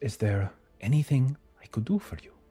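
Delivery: put-on light hint of Italian accent. Voicing a woman who looks up and offers the group help, slight italian accent. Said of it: "She has like a slight Italian accent".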